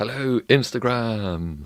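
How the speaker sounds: big arena announcer style. Going live on Instagram, greeting the viewers in a big stadium voice. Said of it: "the big stadium voice".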